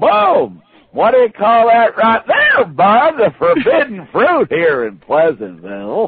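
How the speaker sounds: put-on very high, very loud older-man voice with swinging pitch. Retelling dubbing a TV repairman in a movie, Don Knotts as an older man. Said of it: "I had to do Don Knotts as an older guy".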